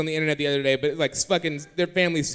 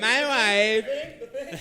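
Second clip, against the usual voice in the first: put-on Kazakh accent character voice, higher pitch; 6 semitones higher than usual. Asking the others about Borat, then doing a Borat voice. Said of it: "Ever seen Borat? He's like".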